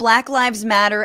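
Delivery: ordinary talk, nothing marked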